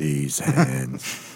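soft voice of a huge stone giant. Asking how the stone guy's voice went, a listener tries it: giant stone guy voice. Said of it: "How was that voice again?".

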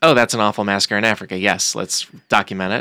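normal talking voice

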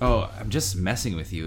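ordinary talk, nothing marked

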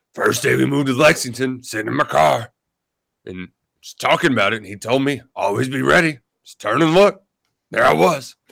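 poorly done, raspy voice. Retelling Ray's answer when asked if they practiced: bad Ray Davis impression. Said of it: "That was a bad Ray Davis impression".

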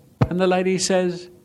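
ordinary delivery

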